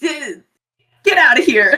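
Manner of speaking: flustered in-character delivery. Voicing a character who tries a badass line: flustered character line. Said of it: "just so, like, flustered".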